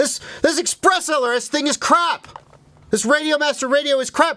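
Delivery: very high, shrill, annoyed, fed-up complaining. Acting out new radio buyers whose radio fell out of the air: mimicking complaining users. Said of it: "And they're like".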